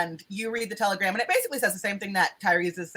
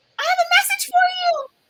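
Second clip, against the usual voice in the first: tiny, very high little mouse squeak; 5 dB louder than usual. Storyteller voices an ant speaking to the main character, really small voice. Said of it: "you hear a really small voice say".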